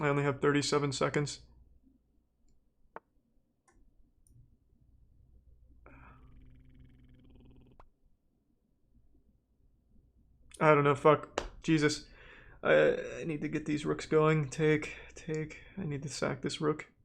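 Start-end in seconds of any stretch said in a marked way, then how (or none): 0.0-11.4 panicked and quieter. Playing chess with only seconds left on the clock: panicking under time pressure. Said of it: "I'm kinda panicking".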